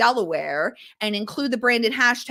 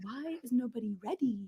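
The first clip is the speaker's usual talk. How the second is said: very quiet, soft fashion-editor voice; 12 dB quieter than usual. Describing the tone of voice wanted for captions, imitating Miranda Priestly. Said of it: "my tone of voice is from Amanda Priestley of Devil Wears Prada".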